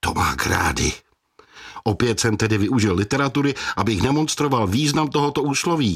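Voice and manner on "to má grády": low hissed voice. Narrator voicing a father who just burned his mouth on hot food, hissing. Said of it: "otevřel ústa a mávaje před nimi dlaní zasyčel".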